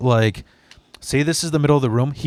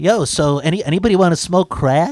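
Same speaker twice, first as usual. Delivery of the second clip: put-on nasal, nasally suburban teen voice; 4 semitones higher, 3 dB louder than usual. Retelling a suburban kid who came by offering crack, in a nasally suburban kid voice. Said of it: "He had this like nasally voice".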